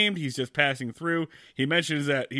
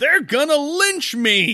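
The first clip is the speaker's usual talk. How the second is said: mock very high, stretched-out, drawn-out shriek; 10 semitones higher, 5 dB louder than usual. Retelling a TV episode where a jailed man screams: imitating a man screaming. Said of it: "he's screaming".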